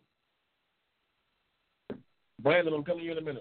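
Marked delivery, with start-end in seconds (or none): 2.4-3.4 fast, hurried, rattled-off delivery.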